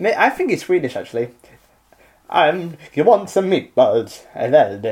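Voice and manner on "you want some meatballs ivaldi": put-on Italian accent, much slower. Speaking to Ivaldi, meant to sound Swedish, in an Italian accent. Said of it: "But you're still in an Italian accent".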